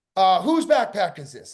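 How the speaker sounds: imitated rude, impolite tone. Retelling what a stewardess said to them: imitating someone speaking rudely. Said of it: "the woman says very rudely to me".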